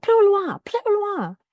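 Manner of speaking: very high scream, in French. Retelling screaming at a man who followed her to the platform: imitating someone screaming. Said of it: "just screaming at him".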